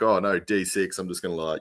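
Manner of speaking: normal talking voice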